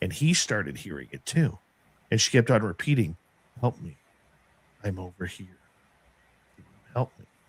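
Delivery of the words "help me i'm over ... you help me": very flat, low, soft monotone woman's voice. Retelling a voice the speaker and Tim heard repeating words: monotone woman's voice. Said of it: "a woman's voice, very monotone".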